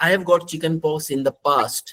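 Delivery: normal talking voice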